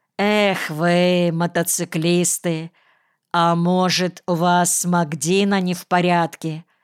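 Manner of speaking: plain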